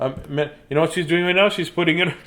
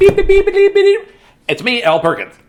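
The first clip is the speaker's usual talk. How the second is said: put-on very high, loud, sing-song kids' TV reporter voice; 8 dB louder than usual. Joking about a children's book author's name, Sesame Street reporter voice. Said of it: "he sounds like a Sesame Street reporter".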